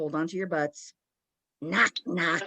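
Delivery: deep, growled-out growly voice. Retelling Janet answering Gross, imitating Janet's growly voice. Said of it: "in a growly voice".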